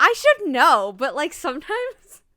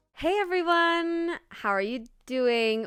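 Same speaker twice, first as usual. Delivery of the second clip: robotic delivery, slower; 6 dB quieter than usual. Opening a podcast episode, greeting the listeners, sounding like a robot. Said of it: "I sounded like a robot".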